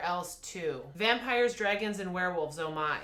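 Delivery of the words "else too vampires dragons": ordinary delivery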